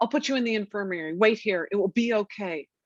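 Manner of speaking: put-on alarmed, panicky, panicked voice. Recounting a guard's reply after she told him about her period: imitating a panicked guard. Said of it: "with a panicked voice said".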